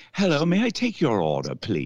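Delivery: put-on, sing-song British accent. Playing a drive-through worker taking an order: British accent. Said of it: "with a British accent".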